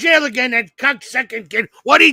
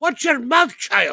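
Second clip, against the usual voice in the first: put-on voice of an older Indian woman. Retelling a call where an older lady scolded them; imitating an older lady. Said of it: "And she goes".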